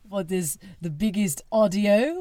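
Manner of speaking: slow, bad, wandering put-on French accent. Joking about a tiny French restaurant date: bad fake French accent. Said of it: "That was a Citizen of the World accent".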